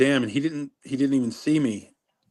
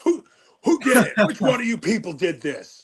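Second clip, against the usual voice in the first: high, furious, outraged, raging voice; 8 semitones higher than usual. Retelling how a prank victim reacted to cinder blocks: imitating someone raging. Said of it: "just sharing his rage in it".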